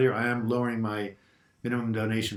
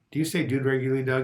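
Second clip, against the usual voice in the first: normal talking voice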